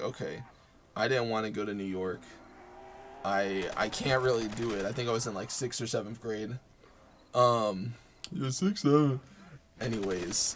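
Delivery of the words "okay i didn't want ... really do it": ordinary talk, nothing marked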